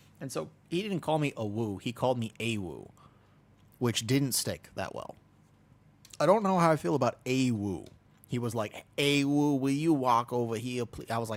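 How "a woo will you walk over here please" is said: put-on American Southern drawl, louder. Retelling how a very southern raid lead called the name: imitating an American Southern accent. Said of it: "like American Southern".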